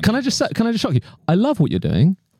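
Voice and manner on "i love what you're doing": upward inflection at end, higher pitch. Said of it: "You wouldn't go up at the end".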